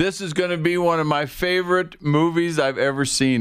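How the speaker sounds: loud dramatic declaration. Retelling standing up in the theater at a movie's first scene, loud voice. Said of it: "in a pretty loud voice said".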